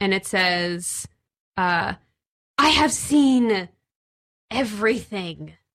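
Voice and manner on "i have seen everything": sibilant hissing voice. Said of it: "like, hissing voice".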